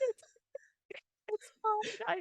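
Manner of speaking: tearful, high, soft sobbing voice.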